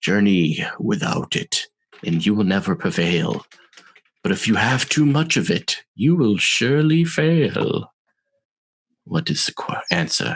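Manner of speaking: throaty, guttural monster voice. Narrating a game, the speaker voices a red-eyed creature posing a riddle, low and guttural. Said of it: "in this kind of low, guttural voice".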